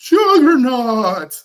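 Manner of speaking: very loud, high, huge belted cartoon yell. Retelling a cartoon scene where Juggernaut attacks: Juggernaut voice. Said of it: "Juggernaut attacked and he's like".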